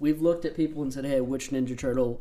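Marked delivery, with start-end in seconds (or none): none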